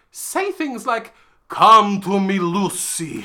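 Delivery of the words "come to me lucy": very loud, very slow Transylvanian accent. Quoting a line an actor says as Dracula: Dracula's Transylvanian accent. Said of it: "with a Transylvanian accent".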